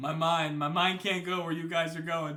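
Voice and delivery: put-on earnest, desperate pleading tone. Retelling a friend's reaction to a game scene: imitating earnest desperation. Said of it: "with such earnest sort of, like, like, desperation in her voice just said".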